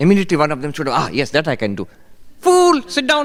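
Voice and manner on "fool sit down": shrill, loud, very high-pitched voice. Quoting a man's retort to someone who fetched water, imitating his high-pitched voice. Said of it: "He had a high-pitched voice".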